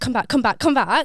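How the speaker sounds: mock shouting. Retelling being left alone, the speaker recreates calling after someone, retelling a shout. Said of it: "So I'm like shouting at him".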